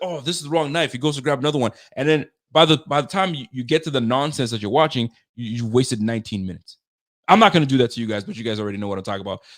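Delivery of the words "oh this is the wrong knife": offhand, casual online cooking-video host patter. Mocking a guy in long Facebook cooking videos: imitating a Facebook cooking video guy. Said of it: "and he's like".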